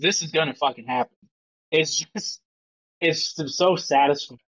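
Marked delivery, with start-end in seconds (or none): 0.0-1.2 blunt, firm delivery full of conviction. Retelling how Master Chief answers the crew: Master Chief, blunt with conviction. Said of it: "the conviction when he says it".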